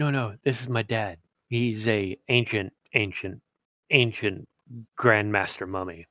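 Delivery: stage half-whispered, hushed, in-character confiding tone. Leaning over in character to tell a companion about a father: half-whispering in character. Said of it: "leans over and whispers".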